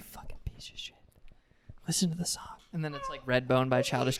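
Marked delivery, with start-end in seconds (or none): 0.0-2.4 put-on hushed, whispered frat boy voice, quieter. Acting out a frat boy asmr video: whispering frat boy. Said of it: "but he's whispering that".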